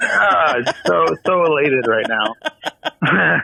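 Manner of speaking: slow, laughing, mock elated delivery.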